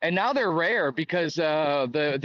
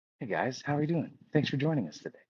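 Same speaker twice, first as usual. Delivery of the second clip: gentle, soft-spoken, quiet voice; 3 semitones lower, 6 dB quieter than usual. Copying another speaker's greeting right after him: imitating Stamey's soft voice. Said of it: "And then me copying him".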